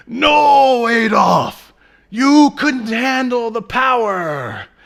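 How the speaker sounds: hammy, over-the-top, very high, very loud. Retelling a movie scene where a gang member objects: imitating an over-the-top performance. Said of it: "in a very over-the-top, uh, performance".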